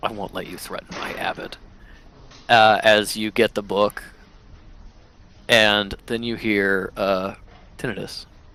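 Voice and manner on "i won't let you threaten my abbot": muttered character voice, much quieter. A narrator voices Oz glaring at a player character, Oz muttering under her breath. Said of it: "under her breath be like".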